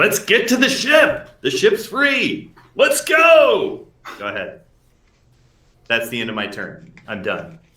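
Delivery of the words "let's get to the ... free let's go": very high, drawn-out yell, pitch climbing throughout. A player on their turn asks to yell, then does: yelling. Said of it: "Can I just yell?".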